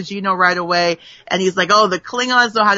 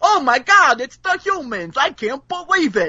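put-on pitched-up Brooklyn accent, Bensonhurst style; 5 semitones higher than usual. Recapping an episode, the speaker quotes a new character: Barry Waddle's Brooklyn accent. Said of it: "that accent".

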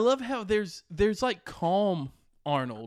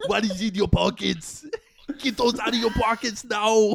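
put-on Austrian accent, pitched higher; 4 semitones higher, 4 dB louder than usual. Trading movie-voice impressions with friends, Arnold impression. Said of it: "Your Arnold is a really good one".

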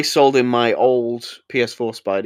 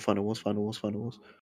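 hushed whisper, much quieter and faster; 2 semitones lower, 14 dB quieter than usual. Listing Godzilla movies while looking at someone, whispering. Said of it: "I don't know why I'm whispering".

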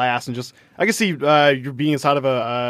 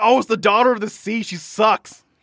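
high, screamed, taunting voice; 9 semitones higher than usual. Retelling walking through while people scream at them: imitating people screaming. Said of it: "people are, like, just screaming at us".

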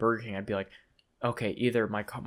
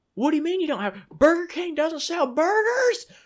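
shrill, very high-pitched yelling outburst; 7 dB louder than usual. Retelling a man yelling at the ordering microphone, imitating someone yelling. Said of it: "he starts yelling at the microphone".

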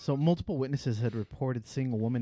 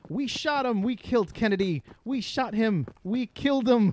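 put-on very high, loud, slow, drawn-out holler; 10 semitones higher, 6 dB louder than usual. Retelling what witnesses heard a fleeing woman shout: imitating a woman shouting. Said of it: "the woman in the polka dot dress shouting".

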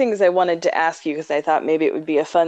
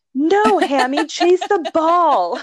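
put-on, very high, shrill shouted yell; 12 semitones higher, 3 dB louder than usual. Parent retells their son scolding the little dog Hammy, retelling a child's yell. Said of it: "just yelling".

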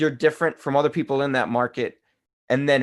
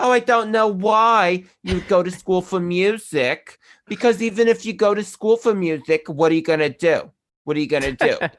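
put-on Long Island accent at a higher pitch; 4 semitones higher than usual. Imitating people who ask about a music degree: imitating a Long Island accent. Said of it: "they'd have a Long Island accent".

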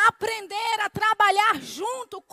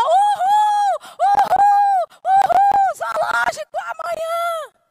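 very high, loud, gleeful, acted child's excited whooping; 10 semitones higher, 6 dB louder than usual. Retelling a three-year-old copying his running brother in church, retelling a child's excited shout. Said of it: "quando ele viu o irmão dele dando uma carreira".

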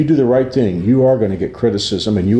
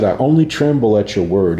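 normal talking voice

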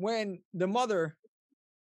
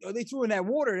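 ordinary talk

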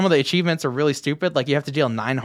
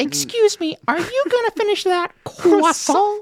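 put-on very high-pitched cartoon kid voice; 3 dB louder than usual. Whenever someone says croissant, the speaker does this voice: Carl Wheezer voice. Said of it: "I just want to do the Carl Weezer voice".

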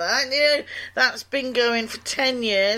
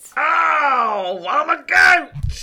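loud booming pirate voice with drawn-out oh; 4 semitones higher, 6 dB louder than usual. Playing a goat in a comic bit, Captain Kidd pirate voice. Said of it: "That's a pirate goat".

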